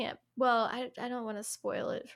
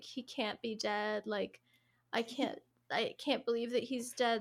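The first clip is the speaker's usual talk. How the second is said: put-on hysterical crying and sobbing. Retelling a friend coming out of her room: imitating hysterical crying. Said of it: "hysterically, like, hyperventilating".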